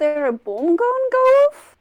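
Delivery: put-on Scottish accent falling apart, slipping. A character questions a man who just checked his watch: failing Scottish accent. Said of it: "my Scottish accent is failing me".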